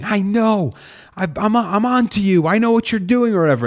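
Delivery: put-on very high, worked-up, agitated shrieking. Retelling a movie scene where the character gets agitated: imitating someone screaming agitatedly. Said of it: "gets agitated and starts, like, screaming".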